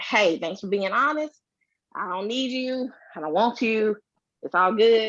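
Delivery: plain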